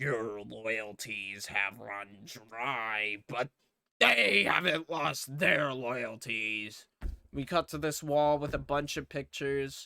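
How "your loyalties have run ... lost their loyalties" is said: slow, low, menacing villain voice. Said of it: "He's like".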